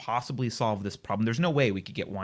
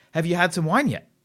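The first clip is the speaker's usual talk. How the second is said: mock pushy, loud, pitched-up aggressive waiter voice; 8 semitones higher, 7 dB louder than usual. Retelling a dinner where the waiter keeps asking about wine, imitating an aggressive waiter. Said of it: "increasingly in our face and aggressive".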